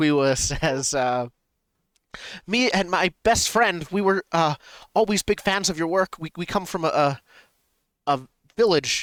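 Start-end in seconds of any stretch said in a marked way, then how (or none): 2.5-9.0 put-on, higher-pitched character voice. Speaking in character, telling someone they are big fans: higher-pitched voice than normal. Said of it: "in a higher pitch than normal voice".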